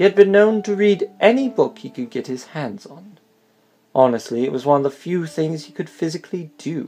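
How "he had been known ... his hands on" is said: standard English, said loudly. A storyteller reads the opening of a tale: standard English accent. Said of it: "read it in a standard English accent".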